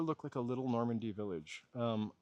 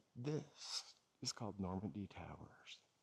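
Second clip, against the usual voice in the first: speaking in a whisper, quieter; 3 semitones lower, 10 dB quieter than usual. Showing a building nearby, whispering. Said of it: "I'm only whispering".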